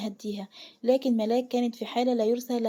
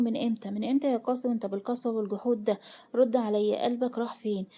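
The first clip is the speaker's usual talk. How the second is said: ordinary delivery, nothing marked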